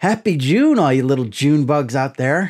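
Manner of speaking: condescending, patronizing, cutesy tone. Trying the greeting again for viewers: condescending and cutesy. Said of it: "Now I'm kinda condescending".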